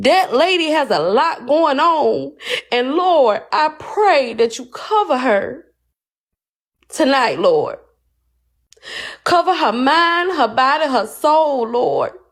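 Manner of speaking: heartfelt, near-crying, pleading voice. Praying aloud for a lady the speaker doesn't know: on the verge of tears. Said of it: "I don't even know why I'm about to cry about this".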